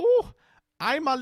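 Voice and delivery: very high, fake German little-boy accent. Retelling how she put on a voice asking for an autograph: mock German little-boy accent. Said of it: "she starts doing this voice that's like".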